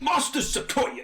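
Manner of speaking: put-on butchered Cockney accent. Voicing a servant calling out to his master, in a butchered cockney accent. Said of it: "A little bit of Cockney".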